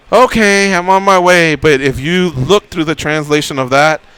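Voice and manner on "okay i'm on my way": put-on polite voice, higher, slower. Retelling a woman's reply to him, mock-polite reply. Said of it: "she gave me a polite".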